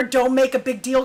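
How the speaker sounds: plain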